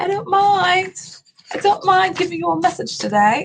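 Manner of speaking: put-on British accent. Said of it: "I'm getting really good at my English accent".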